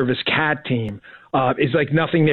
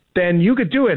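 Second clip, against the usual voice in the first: excited, high-pitched, pushing energy. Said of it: "I guess I sound so excited".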